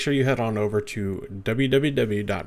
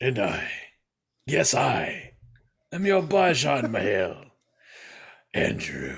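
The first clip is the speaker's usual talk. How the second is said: very slow, swooping, put-on deep voice. Giving a name in the podcast introduction: put-on deep voice. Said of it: "My voice isn't actually this deep".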